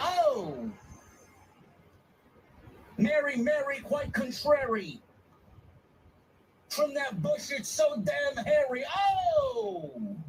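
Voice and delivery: "oh" dragged out, very high and slow. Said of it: "Like [name] or [name]".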